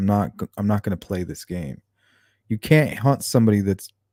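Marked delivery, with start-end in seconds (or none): none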